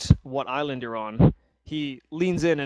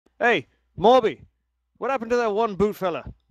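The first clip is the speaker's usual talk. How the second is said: high, loud, calling-out yell; 7 semitones higher, 3 dB louder than usual. Narrating a game scene, the smith waves a hand and yells out to somebody. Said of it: "he yells out to somebody".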